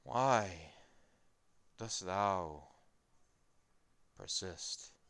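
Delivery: slow, undead talking-corpse voice. Voicing a skeleton corpse speaking to the players: talking corpse voice. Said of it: "Who is talking? The corpse?".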